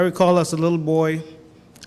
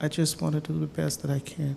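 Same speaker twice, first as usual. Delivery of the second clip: another man's lowered, soft voice; 8 dB quieter than usual. Relaying a man's answer to a prediction question: lowered voice quoting his answer. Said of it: "I'm going to lower my voice because this, this is actually his answer again".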